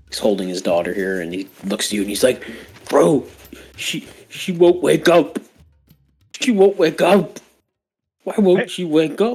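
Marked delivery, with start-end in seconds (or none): 2.8-9.3 slow, blubbering, crying through every word. A narrator voices a father holding his daughter: blubbering, sobbing. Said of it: "he's obviously just blubbering".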